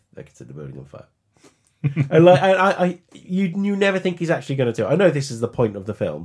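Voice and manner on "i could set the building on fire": very quiet, low, hushed under-breath mutter. Speaker quoting a film character who mutters throughout, muttering under his breath. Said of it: "he is just muttering under his breath".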